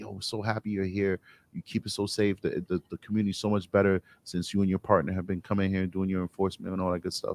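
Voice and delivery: whispering. Retelling what supportive community members say: imitating someone whispering. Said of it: "They'll whisper that to you".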